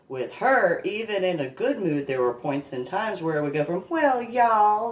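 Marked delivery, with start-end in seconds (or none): 3.8-4.9 fake Southern accent, pitched up. Imitating how a woman's speech switched into her fake Southern accent. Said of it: "let me do that that fake Southern accent that she did".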